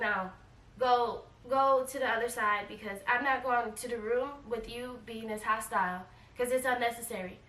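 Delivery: ordinary delivery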